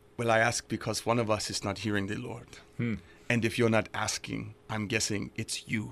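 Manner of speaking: imitated Nigerian accent. Retelling what a man said in a conversation about prayer, imitating a nigerian accent. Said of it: "with his Nigerian accent".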